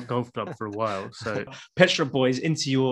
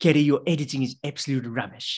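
put-on spoken with South African accent. Asked to do it again during a game: Kevin Pietersen impression. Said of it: "Do it again".

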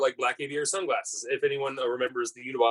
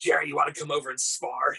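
exaggerated old Brooklyn lady voice, faster; 2 semitones higher than usual. Doing a friend's voice as he invites jerry to spar, overdone old brooklyn lady voice. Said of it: "overdoing his voice and it makes him sound like some 70-year-old lady from Brooklyn".

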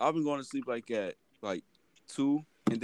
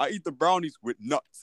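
mock aggressive delivery, pitched higher; 4 semitones higher than usual. Retelling what Sean said: imitating Sean saying it aggressively. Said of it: "He said it so aggressively".

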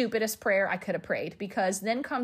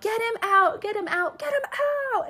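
acted, very high, loud, repeated shrieking scream; 12 semitones higher than usual. Recounting a birth, screaming at Stephen during a contraction, retelling a scream. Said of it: "I screamed at him so loud".

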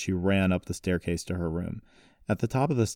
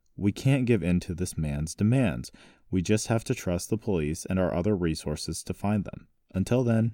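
plain reading voice

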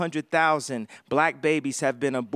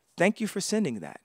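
play-acted, no feeling in the voice at all; 4 semitones higher, 5 dB quieter than usual. Retelling how people replied to a message: imitating an emotionless reply. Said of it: "With no emotion".

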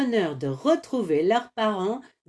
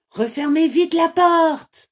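frightened, fearful, high-pitched raised voice; 9 semitones higher, 6 dB louder than usual. A voice calls from inside a cooking pot as visitors enter the inn, frightened. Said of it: "une voix apeurée".

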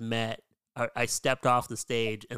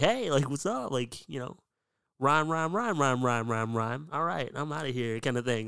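bad, mock-upbeat impression of his own voice; 3 semitones higher than usual. Explaining how he comes across when talking, doing a terrible impression of himself. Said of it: "that's a terrible impression of me".

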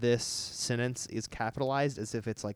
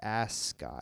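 heavy stress on "ass" in "ascot"; 3 semitones lower, 5 dB quieter than usual. Quoting Barbie complimenting Ken on his ascot: imitating Barbie, stress on ASS in ascot. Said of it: "stressing the ass sound when she says it".

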